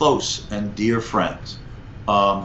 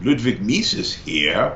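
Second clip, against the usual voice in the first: put-on slow speech in a very thick German accent. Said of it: "in a very thick German accent".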